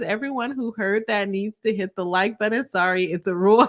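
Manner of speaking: usual speaking voice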